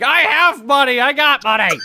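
put-on high screaming, words stretched out. Voicing Art Locks, who is arguing from another room: screaming in character. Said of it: "you just hear Art Locks screaming".

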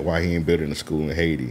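ordinary talk, nothing marked

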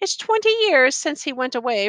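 ordinary delivery

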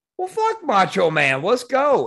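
animated blurted outburst. Retelling a line said on leaving: retelling saying it really loud. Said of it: "And I said really loud".

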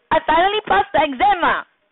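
demanding, insistent tone. Demonstrating for viewers a demanding way of speaking, demanding tone. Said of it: "what is a demanding way of speaking?".

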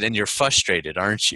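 calm response. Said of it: "very calmly waits for me".

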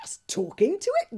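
loud gasp, sheer disbelief and astonishment. Fishlegs reacts to Hiccup's mumbled answer, an astonished gasp. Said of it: "gasped Fishlegs in astonishment".

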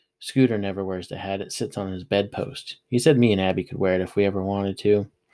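ordinary delivery

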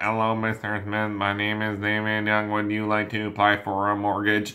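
lifeless, flat, scripted-sounding robotic monotone. Showing salespeople how not to sound on the phone: robotic monotone. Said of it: "Don't sound like a robot".

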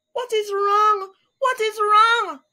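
crying out with a very high voice. After her husband's dismal cry, Mrs. Alligator cries out. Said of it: "cried Mrs".

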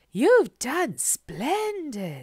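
breathy, swooping voice full of enthusiasm. A woman looks over a man's finished woodcutting, breathing enthusiastically. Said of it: "she breathed enthusiastically".

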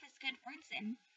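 ordinary delivery, nothing marked

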